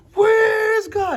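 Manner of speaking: very loud, very high, booming, thundering shout. Telling a story, the rabbi confronting the younger brother: retelling a thundering shout. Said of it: "He's thundering".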